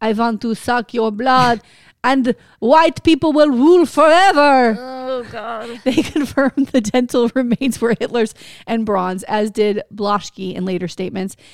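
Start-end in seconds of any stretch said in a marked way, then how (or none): 0.0-4.8 loud, booming put-on vampire voice. The speaker's Hitler impression has suddenly turned vampire-like: vampire-sounding Hitler voice. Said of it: "my Adolf Hitler's voice is vampire".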